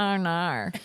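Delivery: Australian pronunciation of the R sounds. Imitating how Caleb said R and R, like an Australian. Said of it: "like, an Australian".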